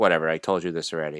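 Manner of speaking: put-on angry voice. Retelling a laundromat dispute, quoting the manager: imitating a mad manager. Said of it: "the manager got mad, and he's like".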